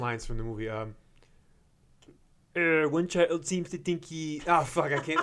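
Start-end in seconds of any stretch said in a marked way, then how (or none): 2.6-4.4 frog puppet character voice. Answering a request to do Sesame Street voices: Kermit voice. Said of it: "Give us a Kermit".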